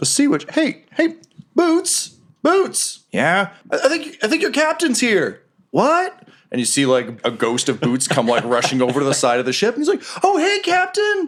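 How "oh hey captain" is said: delighted, cheerful, very high ghostly voice. Voicing a ghost crewmate greeting his old captain: happy ghost greeting. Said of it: "he seems pretty happy".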